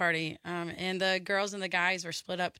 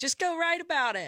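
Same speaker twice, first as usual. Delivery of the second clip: high-pitched motherly voice. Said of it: "she was like".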